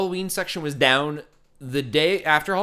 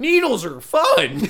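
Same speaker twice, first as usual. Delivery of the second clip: put-on bad, high, kids' show bird-puppet voice; 7 semitones higher, 3 dB louder than usual. Imitating Big Bird in episode after episode: Big Bird voice. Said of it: "we both have a Big Bird voice".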